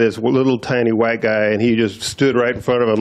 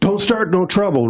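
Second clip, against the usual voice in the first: mock very high, really loud shout; 10 semitones higher than usual. Retelling how a big man warned the speaker in a store: imitating a man saying it real loud. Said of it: "real loud".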